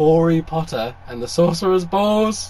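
loud, fighting back giggles, stifling laughter. Speaker reads out a joke title while trying to compose themselves: holding back laughter. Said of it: "I'm trying not to laugh".

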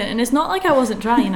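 ordinary talk, nothing marked

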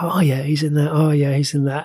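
ordinary talk

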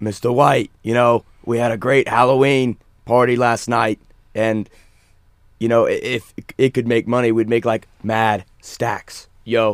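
slangy street punk voice. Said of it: "that's my Jesse impression".

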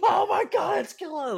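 very high, loud, freaked-out shriek. Retelling how a roommate reacted on meeting Killa: imitating Shane freaking out. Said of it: "freaking the fuck out".

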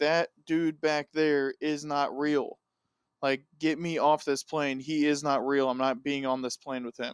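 ordinary talk

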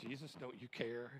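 plain

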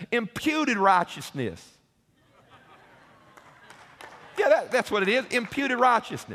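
put-on drawled southern accent. Retelling what a pastor answered, repeating his words in a southern accent. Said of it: "With that southern accent".

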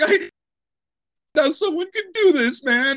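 high, put-on tearful fake crying voice. Retelling the suspect playing it off for the camera: imitating fake crying. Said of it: "camera crying".

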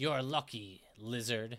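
low, hissed, reptilian dragon voice. Narrating a tabletop game, the dragon answers a lucky roll; hissing dragon voice. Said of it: "The dragon hisses".

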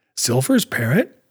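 plain reading voice

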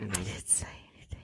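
low, hushed, secretive whisper.

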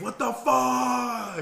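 very high shriek with "fuck" drawn out. Telling how the man got shot in the lip, retelling his scream. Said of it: "he screams like".

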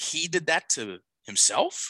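himself said with rising, question-like intonation. Retelling how a woman said her line, with rising, question-like intonation. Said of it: "She said it like a question, ... It went up at the end".

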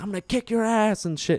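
play-acted, very high, shrill screaming. Retelling a man in his late 60s threatening them from his car: retelling a screamed threat. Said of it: "He's screaming".

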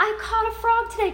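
high, loud, sweet doting lady's coo.

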